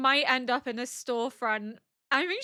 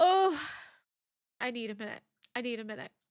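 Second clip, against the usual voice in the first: words spoken through tears, crying while talking. Reacting to a scene and asking for a minute: crying while talking. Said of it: "I can't stop crying".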